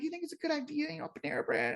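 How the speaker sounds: very high, soft, swooping sing-song little voice. Retelling what a man kept asking the speaker, imitating his way of talking. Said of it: "And that's how he talks".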